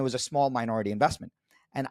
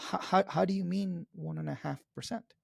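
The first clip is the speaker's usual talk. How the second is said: gentle, soft, curious tone, gently pitched up; 5 semitones higher, 7 dB quieter than usual. Showing how to de-escalate with a question: soft, curious voice. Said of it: "I would soften my voice and say".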